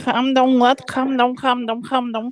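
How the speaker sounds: put-on Liverpool accent. Joking with friends about sounding like scousers: imitating a Scouse accent. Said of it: "Sound like this three scouser?".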